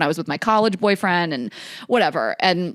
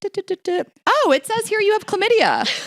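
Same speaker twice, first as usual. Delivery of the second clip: acted-out casual, unbothered, offhand tone; 14 semitones higher than usual. Retelling how her mom read out her lab results: imitating mom's nonchalant tone. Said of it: "So nonchalant".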